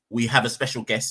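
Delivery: normal talking voice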